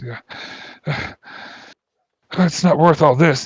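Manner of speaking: very slow, high, freaked-out, defeated voice. Voicing a mage who looks around after his allies fall: freaked out voice. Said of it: "just in a freaked out voice".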